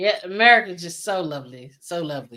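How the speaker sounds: sarcastic tone meaning the opposite. Joking with another speaker about a government shutdown: sarcastic. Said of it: "smelling the sarcasm".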